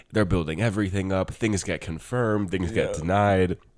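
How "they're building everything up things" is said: ordinary delivery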